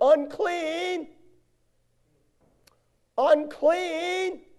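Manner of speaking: high, loud hollered cry.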